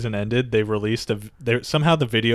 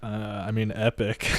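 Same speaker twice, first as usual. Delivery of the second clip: put-on nonchalant voice, quieter; 5 dB quieter than usual. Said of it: "He says it, like, so nonchalantly".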